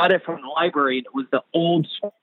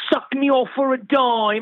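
very high-pitched put-on Cockney accent; 9 semitones higher than usual. Speaker quotes the opening of a book, Cockney accent. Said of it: "I did it in a Cockney accent".

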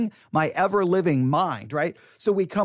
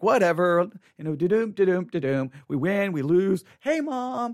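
play-acted breezy, indifferent, couldn't-care-less kid voice. Retelling how young teammates acted about the game: imitating indifferent kids. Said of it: "these kids that I'm playing with just don't seem to care".

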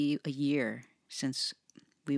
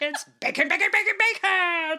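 very high, very loud, booming commercial voice; 9 dB louder than usual. Speaker, reminded of a dog food commercial, imitates its dog, dog food commercial dog voice. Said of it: "You sounded like that dog".

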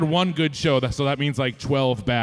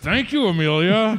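mock forced speech through gritted teeth, higher pitch; 6 semitones higher than usual. Retelling how the speaker thanked the woman who rebooked their flights, through gritted teeth. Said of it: "with gritted teeth".

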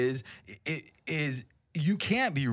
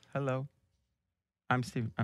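flat, deadpan monotone with no rise; 2 semitones lower, 4 dB quieter than usual. Showing a listener how the comedian talks, a Steven Wright impression. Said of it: "The guy that talks like this".

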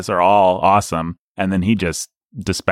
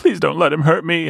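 very high, creaky, rough, put-on feeble and helpless voice; 9 semitones higher than usual. Quoting a scene where Palpatine pretends to be overpowered: imitating Palpatine faking weakness. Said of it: "he's really acting".

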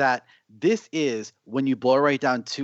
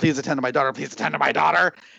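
yelled delivery; 2 semitones higher than usual. Retelling a movie scene of yelling at a nurse: imitating someone yelling. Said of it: "starts yelling at the nurse".

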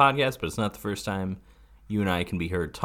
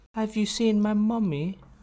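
put-on British accent, higher pitch. Making a mummy joke to the other speaker: british accent. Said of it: "I just did a British accent mummy joke".

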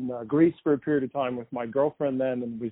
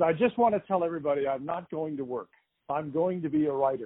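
mock cocky, arrogant, grand kid's voice; 3 semitones higher, 4 dB quieter than usual. Retelling announcing a career plan to relatives: imitating own arrogant young announcement. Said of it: "imagine the arrogance of a twenty-five-year-old kid".

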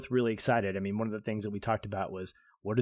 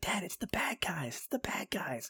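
put-on eager boy's hushed, breathy, excited whisper; 8 semitones higher, 7 dB quieter than usual. Retelling what a son said at the movies: imitating excited son. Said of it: "equally as excited. He's like".

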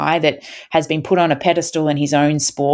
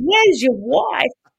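put-on broad ocker bogan Australian accent, pitched way up; 10 semitones higher than usual. Retelling running up to a man named Will, in a broad bogan Aussie accent. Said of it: "In a really ochre bogan Aussie accent".

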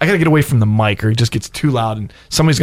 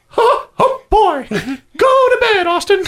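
squeaky cartoon mouse voice, much higher. Speaker retelling what he said to Austin by the TV, Mickey Mouse voice. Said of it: "You're Mickey Mouse?".

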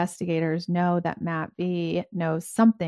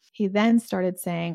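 normal talking voice

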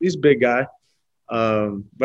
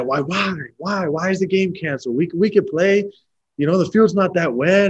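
put-on child's yell, much higher; 6 semitones higher than usual. Recalling rained-out games as a kid, retelling a kid's yell at mom and dad. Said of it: "I'm yelling at my mom and dad".

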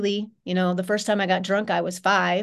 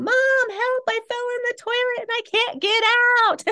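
play-acted little kid screaming, very high and shrill. Retelling falling into the toilet as a child and calling for mom: imitating a child screaming. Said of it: "screaming to my mom".

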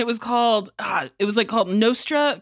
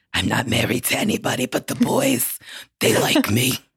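very low smoker's voice from the bottom of the range; 10 semitones lower than usual. Quoting a reality star's line about only dating the boys: Big Ange impression. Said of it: "She would just be like".

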